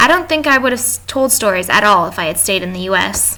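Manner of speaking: normal talking voice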